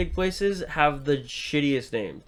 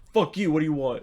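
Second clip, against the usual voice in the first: angry, pissed-off, snapping voice. Imitating the guy at the front counter: imitating a pissed-off counter guy. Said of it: "It's, like, pissed off".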